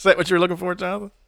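normal talking voice

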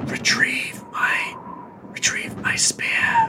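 slow, drawn-out, ghostly whisper.

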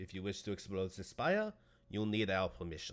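put-on accent blending French and German. Role-playing a character addressing the group: French-German accent. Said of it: "I sound French and German at the same time".

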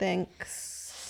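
very slow drawn-out delivery. Thanking another speaker after a compliment, saying thanks really slow. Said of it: "You said thanks really slow".

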